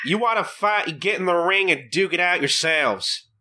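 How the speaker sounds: put-on southern dad voice. Repeating a character's line to show how he sounds, in a southern dad accent. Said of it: "I think John can do a better southern accent".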